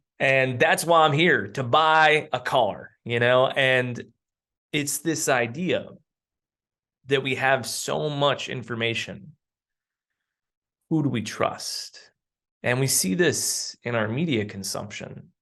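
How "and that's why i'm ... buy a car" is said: fake Southern American accent. Retelling an old school marketer's joke about a customer: imitating a southern accent. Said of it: "And he always did a Southern accent".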